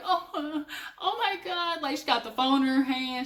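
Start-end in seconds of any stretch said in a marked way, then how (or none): 0.0-1.8 over-the-top exaggerated fake sobbing, very slow and drawn out. Mimicking a woman crying with the phone in her hand: imitating someone crying dramatically. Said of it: "she starts crying like Oscar".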